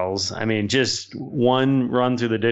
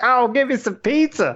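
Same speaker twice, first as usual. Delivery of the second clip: acted, shrill, very high, super loud voice; 13 semitones higher than usual. Retelling what a woman who came up behind them said, imitating a super loud woman. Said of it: "she's just super loud".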